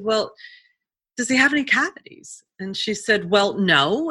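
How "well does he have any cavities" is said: mock-calm, put-on calm tone. Retelling what they said to someone angry with them, retelling a calm reply. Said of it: "And I said calmly".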